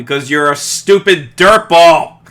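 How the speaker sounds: very loud, high yell, suddenly blurted out. Retelling what was yelled at the TV while watching: imitating own yell. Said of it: "yelled out loud".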